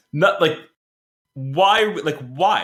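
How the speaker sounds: mock, very slow, drawn-out, angry, exasperated disbelief. Retelling their own reaction to a scene in a movie: retelling own angry outburst. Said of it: "I was getting angry".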